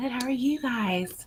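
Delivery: very slow, hushed, half-whispery therapist-like teacher voice. Greeting the others after being brought in: quiet half-whispery teacher voice. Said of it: "Started with a whisper".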